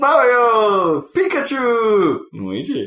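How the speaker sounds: very high, swooping announcer shout. Imitating the character select screen announcer: imitating the Melee announcer. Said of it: "the announcer going".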